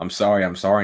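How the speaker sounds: put-on shaking, trembling apologetic voice. Retelling a film scene's farewell, imitating a shaking apology. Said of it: "and he's, like, shaking".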